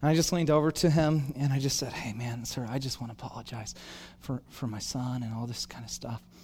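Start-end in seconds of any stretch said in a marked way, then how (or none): 1.9-6.2 very hushed, low, calming, soothing tone. Retelling leaning over to apologize to a man: retelling a low, soothing voice. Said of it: "in a low, soothing voice like that".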